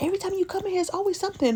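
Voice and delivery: high-pitched, sustained screaming tirade. Retelling what a bartender said: imitating a bartender screaming. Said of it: "she started screaming at me".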